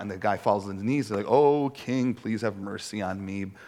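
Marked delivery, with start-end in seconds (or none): 1.3-3.5 slow, mock boo-hoo blubbering, pleading tone. Retelling a man on his knees begging the king, mock-crying plea. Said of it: "boo-hoo, boo-hoo".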